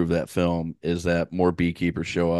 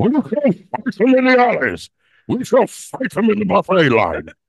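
put-on British statesman voice, higher and louder; 8 dB louder than usual. Trying an impression after being asked who to try: Winston Churchill voice. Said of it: "Winston Churchill".

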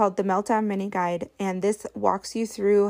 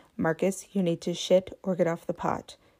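mock very stern, strict tone; 3 semitones lower than usual. A mother retelling what she told her child on the potty: retelling a very stern voice. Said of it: "I said in a very stern voice".

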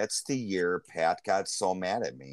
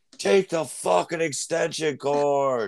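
put-on high drunken scream, "cord" dragged out; 9 semitones higher, 4 dB louder than usual. Retelling a golf outing, screaming at each person who wins something, retelling a drunken scream. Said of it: "I'm screaming at every single person that wins something".

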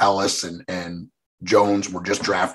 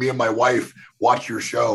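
mock thrilled, excited, starstruck fan gushing; 4 semitones higher than usual. Retelling a hockey player's message, imitating him freaking out. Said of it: "He's, like, freaking out".

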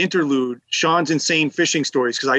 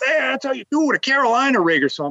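mock brash, boastful, very high, loud voice; 9 semitones higher than usual. Retelling a guy reeling in fish and yelling at them, imitating him mouthing off. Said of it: "he's running his mouth".

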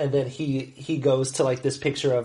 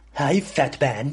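plummy British accent, put-on cartoon infant voice. Asked for another impression, the speaker does Stewie: Stewie impression. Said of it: "Go ahead and do Stewie".

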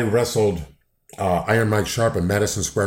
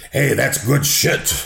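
rough, creaky, gravelly character voice; 4 semitones higher than usual. Answering a request for an impression of Vince McMahon. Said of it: "give us your best Vince McMahon impersonation".

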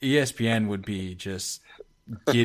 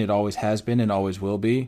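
plain

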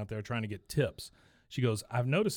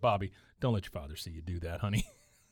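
normal talking voice

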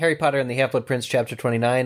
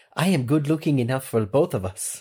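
put-on tentative, unsure, hesitant French accent. Quoting Fleur Delacour's line from the book: French accent. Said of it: "I'm not confident in my French accent".

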